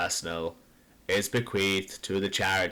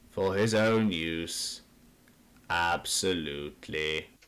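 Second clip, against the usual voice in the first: slow, dry, desiccated, deferential monotone reading. A family solicitor finishes reading the will to the listeners, in a dry monotone. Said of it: "He is a desiccated, deferential man with round shoulders, / He is a desiccated, deferential man with round shoulders, winged collar, / He is a desiccated, / in a dry monotone, I, [name], / in a dry mo".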